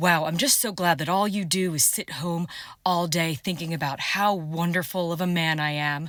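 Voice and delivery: slow, drawn-out delivery. Doing a comic impression of an agent coming home: imitating an ICE agent. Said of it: "my impression of an ice agent coming home".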